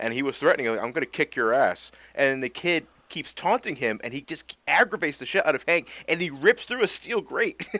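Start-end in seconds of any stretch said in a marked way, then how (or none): none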